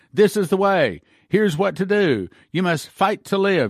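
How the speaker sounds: play-acted, firm, commanding leader voice. Quoting a leader who commanded them to fight, mock-commanding. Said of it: "he was commanding us. I will say it that way".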